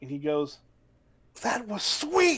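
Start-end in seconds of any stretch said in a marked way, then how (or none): 1.4-2.4 thrilled, delighted, very high-pitched voice. Game master voicing a character who gets up on his turn, really happy. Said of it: "looks at you guys really happy".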